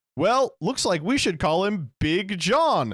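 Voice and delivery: high, silly, put-on goofy cartoon dog voice. Retelling a line said to cheer someone up, in a Goofy impression. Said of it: "In my best Goofy impression".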